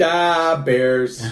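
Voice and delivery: loud Chicago accent. Taking turns doing regional accents, showing what Chicagoan sounds like in a Chicago accent. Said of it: "What does Chicagoan sound like?".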